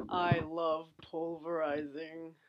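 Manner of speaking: low-pitched British villain voice. Repeating the line into the mic as asked, in an Alan Rickman voice. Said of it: "Do it to the mic".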